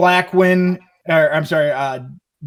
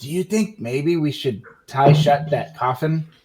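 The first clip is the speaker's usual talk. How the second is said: hushed whisper, close and intimate; 2 semitones lower than usual. In a role-play, a character tugs Alaric's sleeve and speaks to him, whispering. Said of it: "and I whisper to you".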